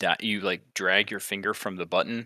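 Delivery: ordinary delivery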